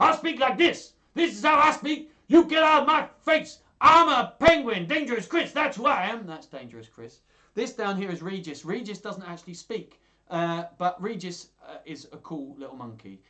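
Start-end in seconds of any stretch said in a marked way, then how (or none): 0.0-6.3 shrill, high, loud, menacing tough-guy penguin yell. Asked how he talks, the penguin answers in Dangerous Chris voice. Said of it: "he does sound dangerous".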